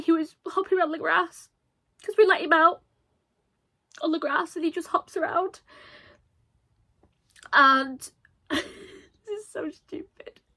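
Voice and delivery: tearful, crying speech. Remembering one who loved her, the speaker keeps talking while crying. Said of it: "Sorry for crying".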